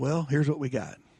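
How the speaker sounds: mock deadpan, dead-serious, straight-faced put-on delivery. Retelling what another man said after the shot, quoting a dead-serious remark. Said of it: "And dead serious".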